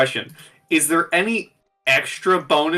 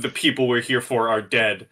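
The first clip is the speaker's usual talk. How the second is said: ordinary delivery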